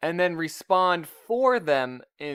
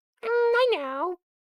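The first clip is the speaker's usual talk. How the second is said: very high-pitched voice. Speaking for the dog Poppy in a made-up exchange: Poppy's voice. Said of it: "has a voice like this".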